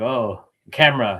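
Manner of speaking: mock self-conscious, caught-off-guard, awkward little reaction. Retelling how someone reacted to a camera: imitating someone awkward. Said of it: "he's awkward and he's like".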